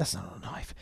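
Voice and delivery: soft, low whisper.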